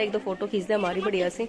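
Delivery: ordinary talk, nothing marked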